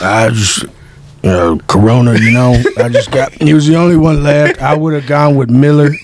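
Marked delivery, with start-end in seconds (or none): 1.2-2.1 cowboy voice impression. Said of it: "and I did Arthur Morgan".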